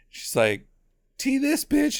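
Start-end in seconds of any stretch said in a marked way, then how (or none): 1.2-2.0 very high-pitched, put-on film-star actress voice. Retelling a scene where the mom throws a glass: Nicole Kidman impression. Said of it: "a little bit more Nicole Kidman impression".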